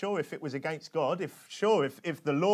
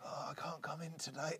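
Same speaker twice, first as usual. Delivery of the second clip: put-on weak, feeble, very quiet sick-sounding voice; 13 dB quieter than usual. Pretending on the phone to be unable to come in, put-on weak voice. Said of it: "like do the weak voice on the phone".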